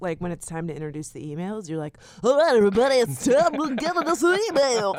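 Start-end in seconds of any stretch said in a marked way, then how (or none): 2.2-5.0 booming, very loud, high-pitched podcast announcer voice. Teasing the other host about introducing the emails, mimicking co-host's podcast voice. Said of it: "when you put on your podcast voice".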